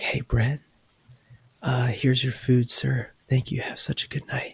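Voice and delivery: soft, soothing ASMR-style murmur. A drive-through worker hands a customer his order, imitating a soft ASMR voice. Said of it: "is she doing A S M R".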